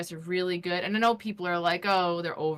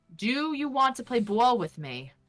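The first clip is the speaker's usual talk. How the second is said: put-on native New York accent, higher; 6 semitones higher, 3 dB louder than usual. Retelling own words spoken to a game prompt: own New York-accented line. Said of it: "say ball without your accent".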